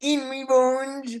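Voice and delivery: put-on heavy French accent. Repeating a misheard word as the valet Marcel: crazy thick French accent. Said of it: "you should not speak with an accent".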